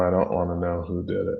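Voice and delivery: ordinary talk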